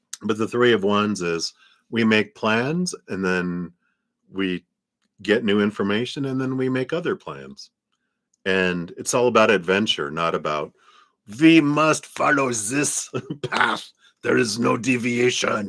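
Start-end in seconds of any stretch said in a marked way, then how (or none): 11.4-15.7 put-on German accent, pitched up. Explaining the Three of Wands card, the speaker slips into a German accent impression. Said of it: "That's my German impression".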